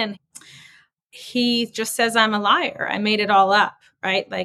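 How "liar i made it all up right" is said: normal talking voice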